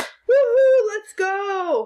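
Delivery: very high, loud, long excited whooping cheer. Teaching how punctuation changes the voice, read a sample sentence aloud as an excited exclamation. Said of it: "do you hear how the voice changes".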